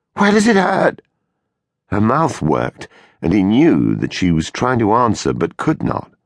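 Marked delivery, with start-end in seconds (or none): 0.2-1.1 desperate, very high-pitched pleading voice. A man leans over Janie, who cannot speak: desperate question. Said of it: "he asked desperately".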